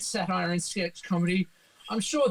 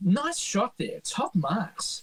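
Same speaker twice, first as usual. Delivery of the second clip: delivered as a narrator's little aside. Quoting the narrator's little asides from the section: imitating Tony Martin's narrating asides. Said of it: "doing all those little asides".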